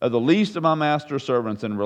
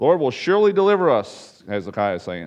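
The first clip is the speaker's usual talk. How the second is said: ordinary talk, nothing marked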